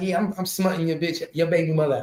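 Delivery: put-on laughing taunt. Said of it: "[name] just sitting back laughing like".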